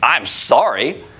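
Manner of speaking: grudging, insincere, dismissive tone. Explaining tone of voice, the speaker demonstrates an insincere apology. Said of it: "and it's not, and someone rolls their eyes".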